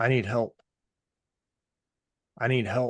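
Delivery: put-on weak, whimpering, pleading cry. Retelling the father's call from the water, imitating a soft whimper. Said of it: "this cry for help was more like a soft whimper".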